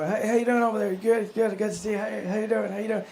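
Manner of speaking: friendly, glad-handing, hearty, sociable tone. Retelling how Joe Biden greeted people at a community meeting: Joe Biden impression. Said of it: "He's just walking around greeting".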